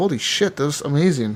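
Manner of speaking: ordinary talk, nothing marked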